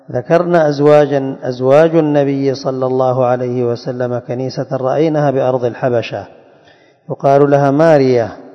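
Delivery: ordinary talk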